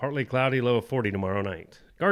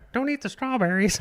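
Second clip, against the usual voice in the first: high-pitched cartoon mascot voice; 11 semitones higher than usual. Acting out what the sponsor's mascot would say: voicing Toothy the mascot. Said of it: "be over there being all like".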